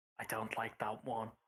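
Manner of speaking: hushed, low, slow half-whisper. Speaking in character, lowering the voice to a half-whisper. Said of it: "lower my voice to a whisper and be like".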